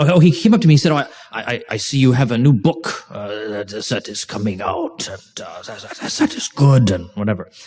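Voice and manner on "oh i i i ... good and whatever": low, put-on German accent, best attempt. Retelling what an acquaintance said on coming up to the speaker, in a put-on German accent. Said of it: "that's my best German German accent I can do".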